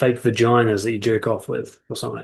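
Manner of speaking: ordinary talk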